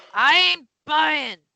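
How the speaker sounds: very loud, high, crusty bearded-sounding voice. Retelling a knock at a door, the person inside answers: crusty bearded man voice. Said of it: "a voice and you can imagine the crusty beard around it".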